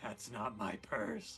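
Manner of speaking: hushed, close, unhurried slow whisper. Sneaking up on an enemy and speaking into its ear: whispering. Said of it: "I whisper into its ear".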